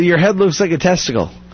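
ordinary delivery

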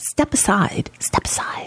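whispered, pleading and begging. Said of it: "please, please, please, Dick Durbin".

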